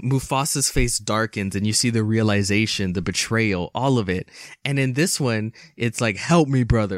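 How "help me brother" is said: play-acted commanding tone, not pleading. Retelling a line from the new film: imitating a commanding tone. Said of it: "like a command".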